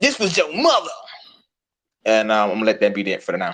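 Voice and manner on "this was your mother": put-on New York accent with very high voice. Quoting a woman who agreed, in her New York accent. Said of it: "in her New York accent".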